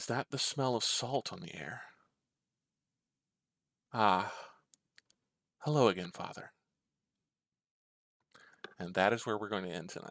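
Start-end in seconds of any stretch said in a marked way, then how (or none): 0.0-6.5 decidedly feminine, gentle voice. Narrator voicing a woman greeting Father from the mist, very soft feminine voice. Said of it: "a decidedly feminine voice, very soft in the mist".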